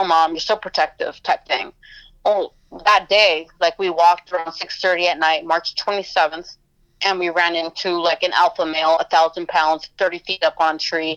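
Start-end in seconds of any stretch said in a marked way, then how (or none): none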